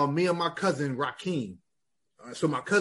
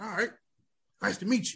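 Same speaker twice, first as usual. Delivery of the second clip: hoarse, really raspy, rasping delivery; 4 semitones higher, 4 dB quieter than usual. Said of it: "his voice was real raspy".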